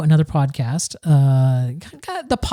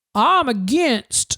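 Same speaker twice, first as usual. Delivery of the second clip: higher put-on Southern accent; 6 semitones higher than usual. Speaker quoting a right-wing caller to a radio show: put-on Southern accent. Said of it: "I don't know why I'm giving this guy a Southern accent".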